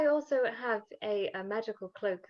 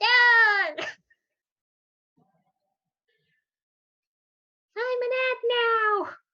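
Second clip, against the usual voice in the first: very high-pitched, very slow, stretched-out yeah; 14 semitones higher, 9 dB louder than usual. During a tabletop game scene, a voice speaks up in a really high-pitched voice. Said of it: "It's just a really high-pitched voice goes".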